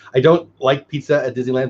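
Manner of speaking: ordinary delivery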